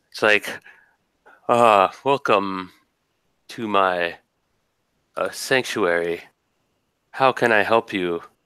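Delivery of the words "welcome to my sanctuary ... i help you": put-on calm, composed, refined deep baritone, odd accent. The game master voices a creature welcoming the players, calm cultured baritone with strange accent. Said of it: "In a very calm and cultured voice with a strange accent".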